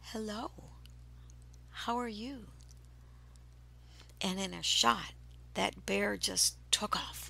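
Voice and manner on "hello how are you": sweet, whispered woman's voice. Approaching a bear to take a picture, the speaker greets it, put-on sweetest woman's voice. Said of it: "in my sweetest woman's voice that I had".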